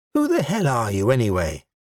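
ordinary delivery

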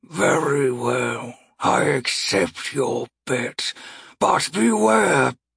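deep, low great beast voice, rising in pitch. Narrator voices the speaker from the maw accepting a human's bet, in a deep voice. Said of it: "a deep voice speaks".

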